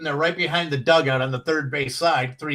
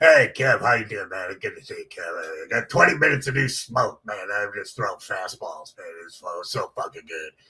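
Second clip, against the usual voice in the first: very low, gruff voice; 7 semitones lower than usual. Telling a story about John Fox walking in and greeting Kev, gruff John Fox impression. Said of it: "he had this gruff voice".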